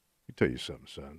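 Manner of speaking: tough cowboy voice, very low and very soft. Challenged to do a voice, the speaker shows off a tough western guy voice. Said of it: "Give me a good, tough Western guy voice".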